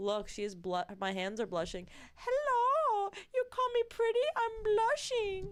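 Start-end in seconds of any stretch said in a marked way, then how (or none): 2.1-5.5 very high, slow, squeaky hand puppet voice. Rubbing in blush and voicing a blushing hand puppet: hand puppet voice. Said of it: "That was my hand puppet blushing".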